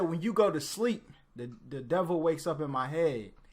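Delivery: plain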